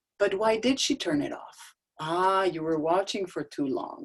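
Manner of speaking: put-on teddy bear voice. Answering an upset best friend after mommy turned it off, bear voice. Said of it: "I suddenly go into my bear voice".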